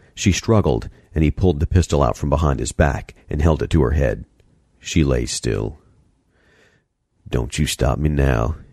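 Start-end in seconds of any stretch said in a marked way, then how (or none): 7.3-8.6 muttered under the breath, slower. A man holding a pistol to a woman's head speaks to her, muttered. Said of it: "he muttered".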